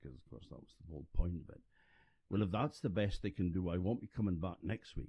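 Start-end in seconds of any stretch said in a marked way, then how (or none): 2.3-5.1 very loud, carrying, acted-out delivery. Retelling an old woman's remark after a talk: imitating a very loud voice. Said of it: "said in a very loud voice".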